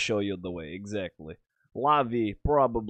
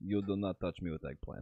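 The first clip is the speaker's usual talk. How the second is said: put-on Russian accent, quieter; 2 semitones lower, 11 dB quieter than usual. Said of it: "why do you sound like a Russian spy".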